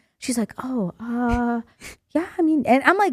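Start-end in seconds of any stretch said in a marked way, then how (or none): 0.6-2.7 put-on whisper, quieter. Retelling how she answered a request for tampons: imitating someone whispering. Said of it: "she started whispering".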